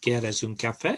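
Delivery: cheerful, pitch rising at end on café. Showing how to sound extra cheerful in Spanish, rising pitch on café. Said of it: "a bit of increase in height at the end".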